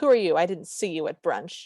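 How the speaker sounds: mock confrontational, pointed, accusatory tone. Retelling how one woman confronted another on arrival, mock-accusatory question. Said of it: "very accusatorily and goes".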